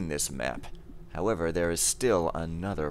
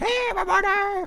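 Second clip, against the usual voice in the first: very high-pitched, squeaky cartoon character voice. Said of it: "like those cartoon characters that come off from the corner of the screen".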